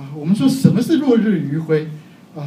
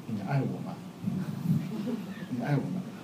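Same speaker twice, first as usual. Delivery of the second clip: low, much softer, almost under the breath. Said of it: "我最怕玉芬问我的一个问题".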